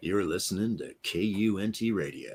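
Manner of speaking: deep, soft, very low, hushed smooth-jazz DJ voice. Announcing the radio station name, in a smooth jazz dj voice. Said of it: "I love my smooth jazz D J voice".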